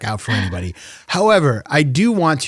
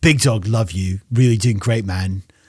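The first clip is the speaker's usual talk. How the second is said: put-on submissive British man's voice; 4 semitones lower than usual. Doing the voice of the man who calls the speaker Big Dog, imitating Nigel. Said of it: "Submissive British man".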